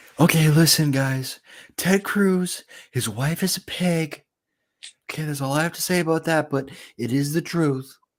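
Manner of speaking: very high-pitched put-on voice. Retelling how Trump walked in talking: Donald Trump impression. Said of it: "That's how he talks".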